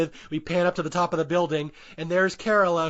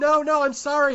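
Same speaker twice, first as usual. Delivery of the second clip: put-on scream, much higher pitch; 9 semitones higher than usual. Recapping a story with crying gargoyles, imitating Preston screaming. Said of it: "poor Preston is like screaming".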